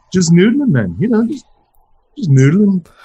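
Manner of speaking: bad obnoxious impression. Retelling how you kept answering the doctor's calls, do an incredibly bad, obnoxious impression. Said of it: "pathetic, incredibly bad, entirely obnoxious impression".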